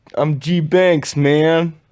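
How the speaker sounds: put-on New York accent. Told to try again, the speaker repeats the sign-off line: put-on New York accent. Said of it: "Try again".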